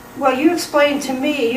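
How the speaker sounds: ordinary talk, nothing marked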